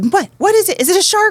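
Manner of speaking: acted, frantic, freaked-out, very high, loud panicked voice. Retelling how the youngest child reacted to glowing water: imitating Maddie freaking out. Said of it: "she kinda freaked out a little bit".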